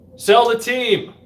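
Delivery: put-on shrill yelling cry at very high pitch. Retelling fans yelling at a team owner after a game: imitating fans screaming. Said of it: "You hear the fans scream".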